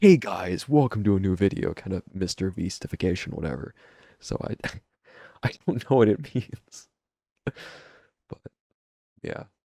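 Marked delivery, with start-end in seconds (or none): 0.0-1.7 hyped-up vlogger voice. Contrasting their own flat delivery, high-energy YouTuber voice. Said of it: "stereotypical like YouTuber voice, like high energy".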